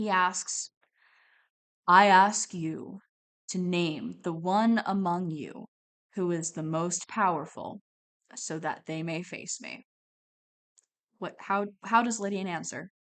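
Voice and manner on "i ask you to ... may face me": stately, commanding, imperious giant's voice. Voicing a giant who questions a player: powerful booming voice. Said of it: "With a powerful, booming voice that rocks you to your core".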